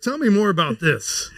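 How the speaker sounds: sudden, high, swooping, interested voice.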